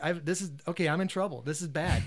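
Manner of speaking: plain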